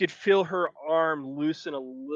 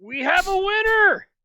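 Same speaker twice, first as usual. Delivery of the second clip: shrill, very high, loud goblin voice; 7 dB louder than usual. As the game's narrator, voicing the goblin after an arm-wrestling match: goblin voice. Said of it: "the goblin goes".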